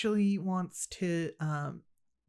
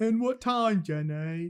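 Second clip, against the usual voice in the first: put-on, fake British accent; 3 semitones higher than usual. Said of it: "my British person accent".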